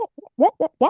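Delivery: put-on very high, loud squeaky baby alligator voice.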